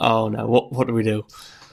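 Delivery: put-on panicked voice. Recounting a problem on a film set, imitating panicked crew. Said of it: "so everyone's panicking".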